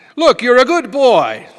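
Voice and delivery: Yiddish-inflected accent, delivered very loud.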